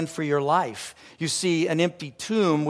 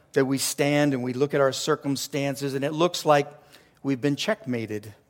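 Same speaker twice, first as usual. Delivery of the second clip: usual speaking voice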